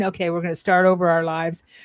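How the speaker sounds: ordinary delivery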